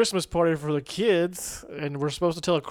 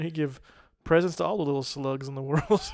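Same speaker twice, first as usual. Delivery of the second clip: ordinary talk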